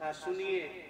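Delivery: low, soft, tearful, pleading murmur.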